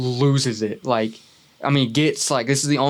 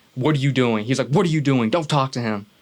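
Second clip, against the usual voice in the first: put-on threatening, menacing tone. Retelling what a man parked in a car said: imitating a threatening tone. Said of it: "in a very threatening tone".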